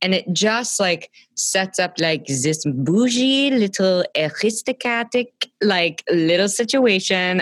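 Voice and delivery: horrible put-on French accent. Talking about how the Aristocats film opens, in a horrible French accent. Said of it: "that was a horrible French accent".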